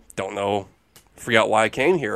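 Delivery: put-on mumble, low and awkward.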